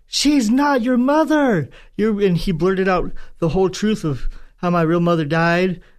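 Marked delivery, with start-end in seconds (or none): 0.1-1.7 put-on drunken, belligerent, high-pitched shout at full volume. Retelling what a drunk father shouted at the top of his lungs: imitating a drunken shout. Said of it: "he shouted at the top of his lungs".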